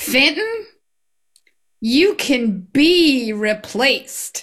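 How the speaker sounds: unhurried, beautiful Southern drawl. Retelling what a teacher said when the speaker squeaked down the hallway, in a Southern drawl. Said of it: "with her beautiful Southern drawl just said".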